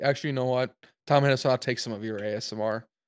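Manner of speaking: ordinary talk, nothing marked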